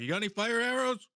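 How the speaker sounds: loud shout pitched very high. Answering a warning in character: in-character yell. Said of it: "Riku yells back".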